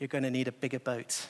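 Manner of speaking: completely flat, stunned, quiet, low deadpan. Retelling how a stunned man on a boat tells the captain: quiet deadpan. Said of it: "to tell the captain quietly, completely deadpan".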